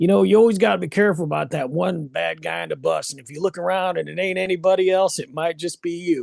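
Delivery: put-on plain Southern American accent. Sharing a quote that stuck with him from a band member, imitating a southern accent. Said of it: "he's got the Southern accent".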